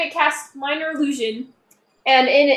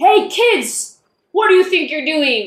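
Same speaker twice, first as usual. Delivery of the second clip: scary, intimidating big official man voice; 3 dB louder than usual. A player casts a sound spell to call out to some kids: scary, official big-man voice. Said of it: "a really official, kind of scary, big man kind of voice".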